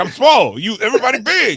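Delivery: playful, loud, high-pitched teasing. Teasing a friend about his height by imitating him: imitating Surratt. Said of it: "It's like".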